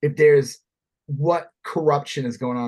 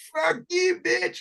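play-acted, shrill, very high-pitched screaming; 3 dB quieter than usual. Acting out a clip for an ad, alleyway scene: imitating Lauren Boebert screaming. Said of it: "screaming, like, in the alleyway".

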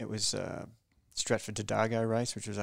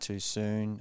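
plain

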